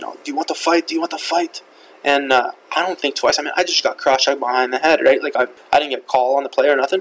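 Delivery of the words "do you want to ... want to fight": put-on heavy French accent, laid on thick. Retelling a fight, quoting the other player who challenged him: thick French accent. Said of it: "he's got pretty thick French accent".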